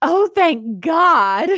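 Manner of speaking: loud, slow yell of relief. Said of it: "And then I just yell out".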